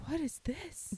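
very high-pitched whispered scream. Retelling someone walking into a small rented office: imitating a whisper scream. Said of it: "whisper screaming".

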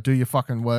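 mock-stern, strict put-on father voice. Describing the father figure expected in Japanese films, imitating a stern father. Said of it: "father figure to always be like stern".

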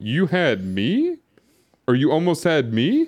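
heavily sarcastic, dripping, swooping tone. Recapping a scene, quoting one character's line to another: retelling a sarcastic line. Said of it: "Dom just said very sarcastically".

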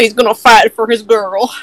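noble-sounding, put-on Southern accent. Cheering on another player's character: put-on southern accent. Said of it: "The southern accent really made it sound noble".

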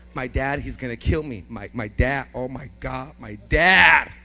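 put-on, very quiet, frantic, panicked muttering. Retelling own past words after breaking something at home: retelling own panic. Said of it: "I'm pacing, I'm pacing".

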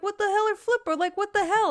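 high, loud, baffled outburst.

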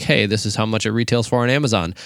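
normal talking voice

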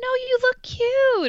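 weird, very high, drawn-out voice. Imitating people reassuring someone about a photo: imitating a weird different-octave voice. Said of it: "in, like, a weird, different octave voice".

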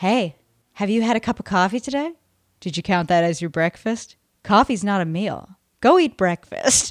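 put-on, mock-creepy voice. Imitating how a man in a video talks: imitating a creepy voice. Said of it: "he's got a very creepy voice".

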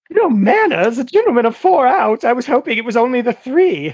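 high, shocked, utterly appalled, scandalized lady voice. Voicing the imagined woman with a fan: imagined shocked lady. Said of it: "a woman nearby standing with a fan".

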